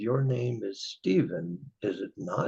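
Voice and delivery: gentle, hushed, soft-spoken voice. Retelling what a voice behind them said while sipping tea, soft-spoken. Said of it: "this soft-spoken voice said".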